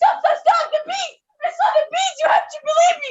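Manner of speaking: very high, piercing, shouted yell. Having fled the beast, he finds the boys yelling and yells back, yelling. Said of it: "So I yelled back".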